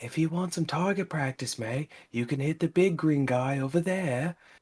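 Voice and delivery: hushed half-whisper under the breath. In a tabletop game, a character speaks privately to Dreek, half-whispering. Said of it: "I whisper to Dreek and I'm like".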